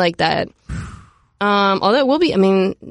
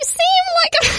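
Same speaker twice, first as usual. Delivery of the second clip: very high, squeaky put-on voice. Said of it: "I do it in his voice".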